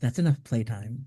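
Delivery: quiet, under-the-breath whisper in a character voice. Narrating a scene for Jessamine as Damien mutters to himself: Damien whispering under his breath. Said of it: "you hear Damien whisper under his breath".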